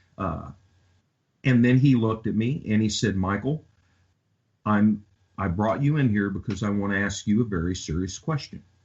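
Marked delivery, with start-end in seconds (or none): none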